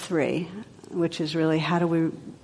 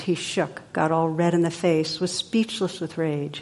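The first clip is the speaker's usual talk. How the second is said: plain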